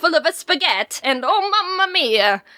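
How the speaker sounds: put-on hammed-up Italian accent. Describing the Italian woman who babysat them, imitating her Italian accent. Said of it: "she'd talk like this".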